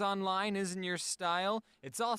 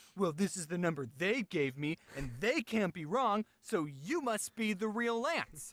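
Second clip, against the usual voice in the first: mock condescending, patronizing, dismissive tone. Retelling a phone call with a woman who later hung up; imitating a condescending woman. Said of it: "she sounded so condescending".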